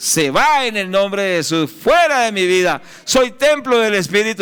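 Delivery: firm, high, commanding voice full of authority. Preaching on how to resist, demonstrating the words spoken with authority. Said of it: "sino es con autoridad".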